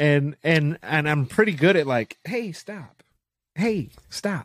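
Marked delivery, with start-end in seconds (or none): 2.2-4.4 very calm, soft, slow, unhurried delivery. Acting out telling an attacker to stop: pretend very calm. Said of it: "Very calm".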